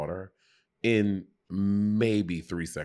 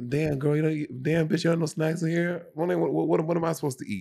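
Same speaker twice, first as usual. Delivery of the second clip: pitched-up streetwise tough-guy voice; 9 semitones higher than usual.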